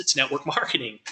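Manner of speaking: laughing through the words. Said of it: "he kinda laughed".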